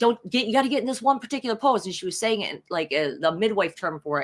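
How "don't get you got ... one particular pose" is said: mock yelling, high-pitched. Retelling how the midwives yelled instructions during labor: imitating midwives yelling. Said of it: "yelling at me".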